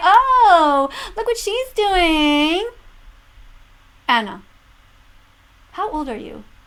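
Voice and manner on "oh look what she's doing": slow, high mocking baby talk, "oh" stretched out. Mocking someone who looks away from what is happening, mocking Anna Oop baby voice. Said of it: "I'll just talk in my baby voice".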